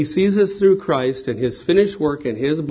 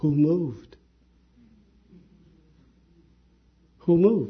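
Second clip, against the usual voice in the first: loving, tender voice; 3 dB quieter than usual. Retelling a husband's answer to his wife in the car: loving voice. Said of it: "he said in a loving voice".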